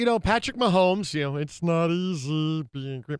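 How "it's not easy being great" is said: cartoon puppet frog character voice. Commenting on a player after a loss on a sports show, Kermit the Frog voice. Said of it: "You sounded like".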